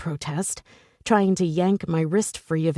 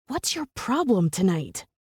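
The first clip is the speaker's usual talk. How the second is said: hushed, whispering voice; 2 semitones higher than usual. Reading a romance scene aloud, the narrator confronting him: whispering. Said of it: "I whisper".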